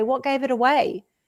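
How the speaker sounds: dry, expressionless, deadpan delivery. Retelling own reply to people who notice the accent: deadpan delivery. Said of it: "with a deadpan face and say".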